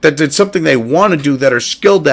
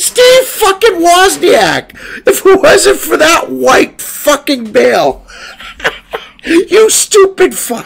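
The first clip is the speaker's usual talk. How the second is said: laughing hard mid-sentence, voice very high; 13 semitones higher than usual. Ranting to someone, then apologizing for it: laughing hard while talking. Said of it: "I'm sorry for laughing so bad".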